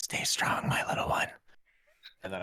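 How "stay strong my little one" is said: pushed-out breathy whisper, strong and carrying. Speaking in character to a little one before running off: whispering. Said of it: "I'm just gonna whisper".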